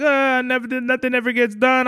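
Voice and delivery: play-acted, high, tearful, weepy sobbing. Retelling a complaint from ma about cleaning: imitating someone crying. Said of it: "she's crying".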